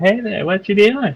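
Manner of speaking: put-on voice of a small child. Voicing a dire T. Rex that talks like a kid, childlike voice. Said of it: "with like the voice of a child".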